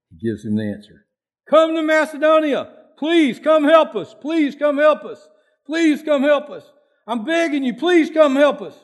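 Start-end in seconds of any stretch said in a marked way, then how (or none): 1.5-8.6 high, loud, slow, desperate begging. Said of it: "He's begging him".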